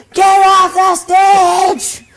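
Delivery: put-on drunk screaming. Retelling a reading where drunk drag queens heckled: imitating screaming. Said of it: "they were just screaming".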